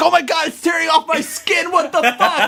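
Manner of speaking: very high squealing scream of pain. Retelling a cartoon where a potato gets peeled, the speaker imitates a screaming potato. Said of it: "And it starts screaming".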